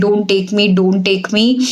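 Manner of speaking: usual speaking voice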